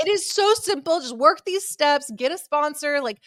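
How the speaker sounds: acted high yell. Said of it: "crying in the closet and then yelling at him".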